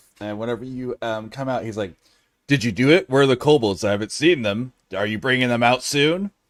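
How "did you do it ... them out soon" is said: very loud, grumbling, grousing voice. Voicing a character sitting in a chair, grumbling. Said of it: "he's still grumbling to himself".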